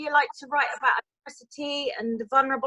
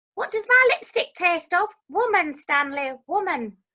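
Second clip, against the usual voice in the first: put-on older woman's voice, aged right up; 4 semitones higher than usual. Showing off acting range by playing an older woman: Hilda Ogden voice. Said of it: "I can also play older women".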